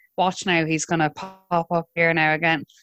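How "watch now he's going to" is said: usual speaking voice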